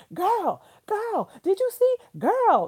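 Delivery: very high, very loud, sing-song excited gushing. Speaker reenacts a phone call after the game, retelling excited gushing. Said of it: "That's how we were for the whole time".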